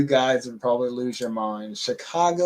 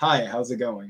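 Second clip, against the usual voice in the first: clean, correct, very proper, accent-free standard speech. Speaker demonstrating a greeting without an accent, very proper, no accent. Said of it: "no accent there ... that sounded very, very proper".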